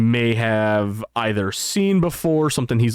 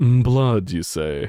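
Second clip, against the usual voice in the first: slow, sly, devious drawl with a smirking tone. Voicing Lazarus answering a player who offers her blood: devious, smirking tone. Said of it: "with a devious smirk and goes".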